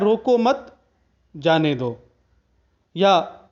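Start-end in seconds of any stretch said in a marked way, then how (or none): 0.0-2.0 line broken with a pause after "roko mat". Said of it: "एक बड़ा ही प्रसिद्ध उदाहरण आता है".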